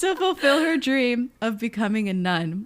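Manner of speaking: loud, high, giggling and laughing through words. Summarizing a drama's plot, already laughing while speaking. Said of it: "I'm already laughing".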